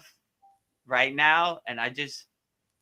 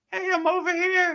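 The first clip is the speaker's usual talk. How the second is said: very high, little craving voice, tempting. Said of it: "it was like that little voice".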